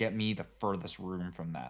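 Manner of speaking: ordinary talk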